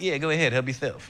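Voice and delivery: put-on lisp. Retelling a friend offering cereal, imitating Marlon's lisp. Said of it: "I didn't realize he had a lisp until I did an impression of him".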